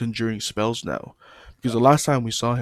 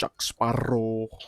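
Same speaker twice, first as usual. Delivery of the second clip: put-on deep Spanish-accented voice. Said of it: "'cause his voice is, like, so deep".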